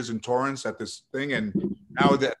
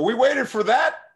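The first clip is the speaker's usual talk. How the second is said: mock loud shout, much higher pitch; 11 semitones higher, 6 dB louder than usual. Retelling calling out on a delayed plane about a late passenger: retelling a loud call-out. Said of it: "And I go real loud".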